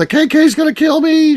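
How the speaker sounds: very high-pitched, loud, shrieking scream. Acting out someone pulling into your driveway, retelling a scream. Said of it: "was screaming".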